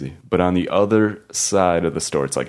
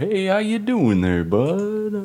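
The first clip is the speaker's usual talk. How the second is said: very high, slow, friendly put-on Southern drawl; 13 semitones higher than usual. Imitating a dad trying to be friendly: put-on southern accent. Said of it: "My dad will throw in that southern accent".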